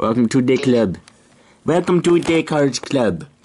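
put-on Jamaican accent. Welcoming a player who just joined the game, in a Jamaican accent. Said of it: "That was a pretty good Jamaican accent".

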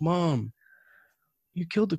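soft, high, put-on sorrowful, fake-sad voice. Retelling speaking to Mom after she had to move a dead mouse, pretend sad. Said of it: "I pretended to be sad about it".

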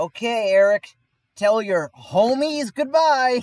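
very high-pitched, very loud call. Retelling grandma picking him up after camp, imitating grandma talking loudly. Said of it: "very loud".

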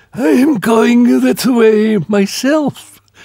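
put-on very high, husky old woman's voice. A narrator reads an old woman's reply to someone who lost their way, in a husky old woman voice. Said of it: "said the old woman in a husky voice".

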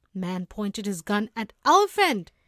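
usual speaking voice

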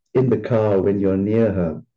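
plain

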